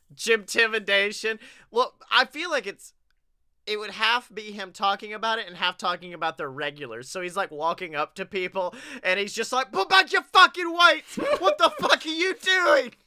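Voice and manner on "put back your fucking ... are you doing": put-on angry chef voice, pitched higher. Pretending to walk up to gym regulars: bad Gordon Ramsay impression. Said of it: "none of these accents are Gordon Ramsay".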